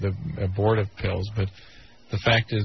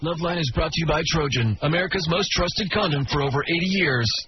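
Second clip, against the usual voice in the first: pitched-up, half-stoner voiceover announcer voice; 7 semitones higher than usual. Reading the show's sponsor ad, half-stoner voiceover voice. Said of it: "Sort of half-stoner".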